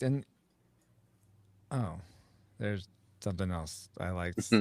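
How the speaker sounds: low, soft, deflated, disappointed tone. Reminiscing with others about things they liked, sounding disappointed. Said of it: "You sound disappointed".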